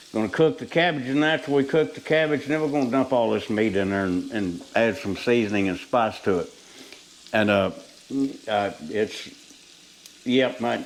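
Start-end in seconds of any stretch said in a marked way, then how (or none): 7.3-10.8 stammering, stumbling over words, much slower. Cooking on camera for viewers, the speaker stammers. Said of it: "I'm stammering".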